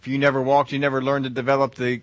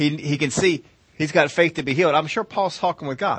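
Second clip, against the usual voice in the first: ordinary talk, nothing marked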